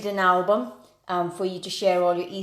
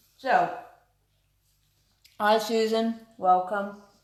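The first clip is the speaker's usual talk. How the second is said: mouth full, much slower; 3 semitones higher than usual. Host welcomes a guest while eating, speaking with mouth full. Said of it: "I'm speaking with my mouth full".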